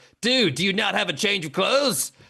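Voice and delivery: silly, weird made-up put-on voice. Retelling a boss complaining about the same outfit, in a weird voice. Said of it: "I'm just gonna do a weird voice".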